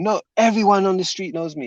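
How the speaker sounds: put-on, high, lost-temper angry yelling. Retelling how a man ran out of the house at night: imitating someone shouting. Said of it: "and he's just shouting".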